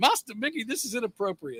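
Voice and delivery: soft, humanoid robot voice. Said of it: "P O's voice".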